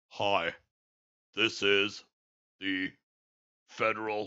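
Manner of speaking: very slow, low, halting broadcast announcer voice. Complaining about the new emergency broadcast announcer, the speaker mimics him: very slow announcer voice. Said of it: "He was talking so slow".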